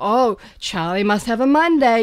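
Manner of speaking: normal talking voice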